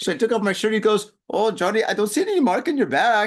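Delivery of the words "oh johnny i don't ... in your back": clumsy, terrible put-on German accent. Telling a story, the speaker quotes Steven's reply in a bad German accent as Steven. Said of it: "that's my German accent. It's terrible".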